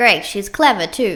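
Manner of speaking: loud, dry, mocking, sarcastic tone. A second robot beside Raven speaks up after her outburst, sarcastic. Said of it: "the sarcastic voice".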